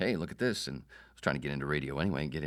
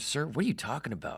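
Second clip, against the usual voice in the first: very high-pitched, freaked-out, flipping-out disbelief; 10 semitones higher than usual. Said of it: "And he's flipping out".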